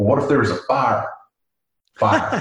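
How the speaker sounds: put-on speaking with a Texan accent. Retelling what Chasey said in a conversation, in Chasey's Texas accent. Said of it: "Chasey goes in her Texas accent".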